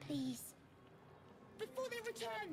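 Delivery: frightened, scared, fearful voice. Pleading with a stranger to act before the enemies return: afraid. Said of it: "You sound afraid".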